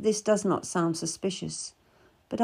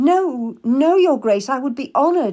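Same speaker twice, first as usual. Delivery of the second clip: embarrassed, flustered, raised voice; 5 semitones higher, 8 dB louder than usual. Answering His Grace's request, the narrator protests, embarrassed. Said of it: "I protest, embarrassed".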